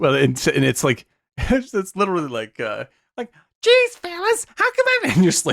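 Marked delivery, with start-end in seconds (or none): 3.6-5.1 mock arch, piercing voice, pitched much higher. Describing a woman's horrible voice on stage, the speaker imitates it: arch and piercing. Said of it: "it's so arch and so piercing".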